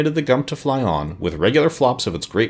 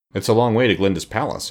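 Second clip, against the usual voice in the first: ordinary delivery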